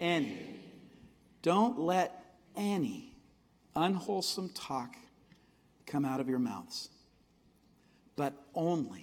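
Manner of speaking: slow, deliberate reading, long pauses between phrases.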